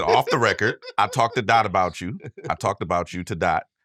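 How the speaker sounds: usual speaking voice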